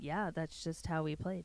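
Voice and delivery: put-on monotone coach voice. Retelling a coach's press conference answer: monotone Brian Idalski impression. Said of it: "he was very monotone".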